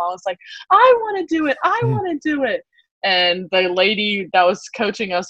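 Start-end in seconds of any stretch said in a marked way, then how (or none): 0.7-2.6 very high, insistent, eager yell, acted out. Retelling begging a parent to join the swim group: imitating own childhood yelling. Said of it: "I was, like, yelling at my mom".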